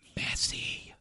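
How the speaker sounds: hushed, very quiet whisper. Guessing whose career they mean, naming him quietly: whispered 'messi'. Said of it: "I'll whisper it".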